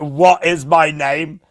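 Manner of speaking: put-on very slow, loud, hostile, aggressive tone. Retelling how the other speaker suddenly asked this: imitating an aggressive question. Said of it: "In, like, a very aggressive".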